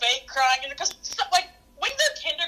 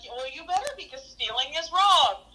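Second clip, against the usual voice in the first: ordinary talk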